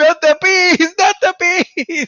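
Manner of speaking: shrieked yell, pitched very high. Retelling a movie scene with a helmet of bees: imitating Nicolas Cage yelling. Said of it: "He's, like, yelling, like".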